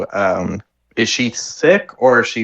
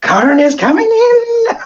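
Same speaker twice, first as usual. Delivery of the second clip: very high, loud, stretched-out, drawn-out yell; 6 dB louder than usual. Voicing a tiny character ramming a door with his shoulder: yelling. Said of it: "He's yelling".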